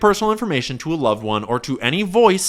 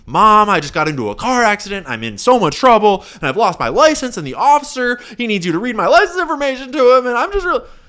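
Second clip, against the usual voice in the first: put-on panicked, tearful crying, climbing pitch; 6 semitones higher than usual. Acting out a scam call to a mom: imitating a freaking-out, crying caller. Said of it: "call your mom freaking out".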